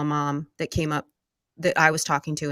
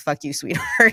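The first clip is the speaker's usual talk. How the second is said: high-pitched, spiteful, hostile, unloving tone; 6 semitones higher, 4 dB louder than usual. Retelling how her husband says sweetheart while being coached: imitating a hostile, unloving "sweetheart". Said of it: "that's not a loving sweetheart".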